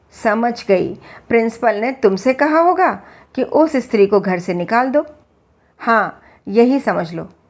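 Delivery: ordinary delivery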